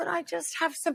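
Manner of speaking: put-on soft, high small child's voice, like a little boy. Explaining a more sympathetic way to ask for something: little boy voice. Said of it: "if you do a little boy voice of".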